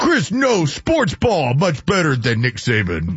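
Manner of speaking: swooping, broken caveman speech. Host repeats the line, this time in caveman voice. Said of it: "you got to do it in caveman voice".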